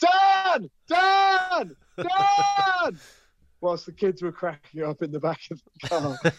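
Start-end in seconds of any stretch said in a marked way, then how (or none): 0.0-3.0 high, loud screams, each stretched way up. Retelling how she kept calling out a name on the car journey, retelling screaming 'dan!'. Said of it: "I'm going to scream Dan as soon as I see him".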